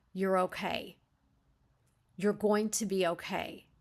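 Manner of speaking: frightened, scared voice trying to sound reassuring. Coaching how to reassure someone while being afraid yourself; afraid, trying to reassure. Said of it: "And so you're also afraid".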